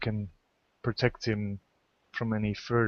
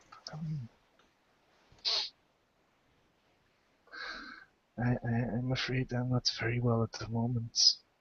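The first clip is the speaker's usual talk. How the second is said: very weak, feeble, quieter voice; 2 semitones higher, 5 dB quieter than usual. Voicing a sick father who has just woken: very weak voice. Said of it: "speaks with a very weak voice".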